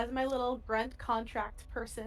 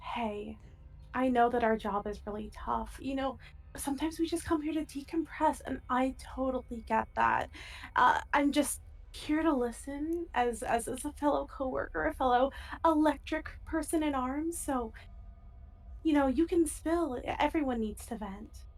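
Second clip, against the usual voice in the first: gentle, quiet, soothing, reassuring voice; 3 semitones higher than usual. Using a calming power, the speaker approaches a coworker to let him vent, quiet soothing voice. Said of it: "when I talk to someone for a few seconds in a quiet voice".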